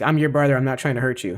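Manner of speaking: ordinary talk, nothing marked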